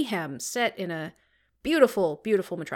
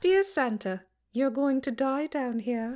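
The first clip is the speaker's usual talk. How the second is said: put-on British accent; 3 semitones higher than usual. Playing around with voices in a chat, doing a put-on british accent. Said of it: "British it up".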